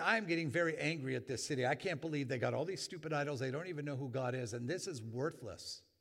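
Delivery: ordinary talk, nothing marked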